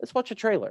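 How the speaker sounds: sweet, very wholesome, friendly tone. Announcing to the group it's time for the trailer: very wholesome delivery. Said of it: "You said that in the most wholesome way possible".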